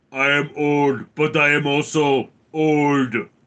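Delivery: loud, slow, flat deadpan monotone. Doing an impersonation of the Terminator for the chat: Terminator voice. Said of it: "My impersonation of the ter-, of the Terminator".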